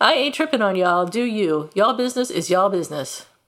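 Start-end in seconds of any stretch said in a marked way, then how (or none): none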